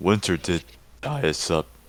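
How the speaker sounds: voice cracking. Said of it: "Ignore that voice crack".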